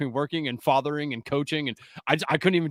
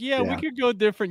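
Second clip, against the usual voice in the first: grudging, half-hearted, reluctant tone, a bit higher; 8 semitones higher than usual. Teasing the other speaker by repeating his words: imitating Steve's reluctant agreement. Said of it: "You didn't wanna do it".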